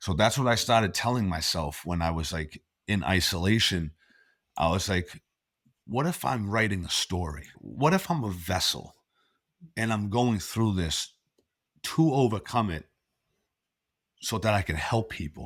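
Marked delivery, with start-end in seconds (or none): 5.9-15.5 emotional voice, full of feeling and wonder. Telling a listener what she told herself in isolation: getting emotional. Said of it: "I'm getting emotional, sorry".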